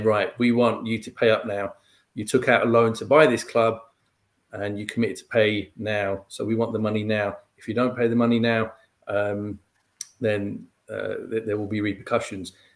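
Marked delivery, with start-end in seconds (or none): none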